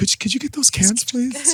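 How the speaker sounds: very high, overly courteous, polite librarian voice. Imagining a librarian working as a garbage man: polite librarian voice. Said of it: "put a librarian as a garbage man going".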